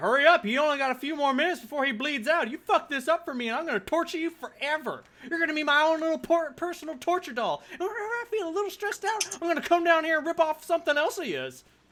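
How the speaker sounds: very high, shrill, loud Appalachian backwoods patois. Retelling her threats to the kneeling guards: appalachian patois. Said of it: "it just sort of degenerates into that patois".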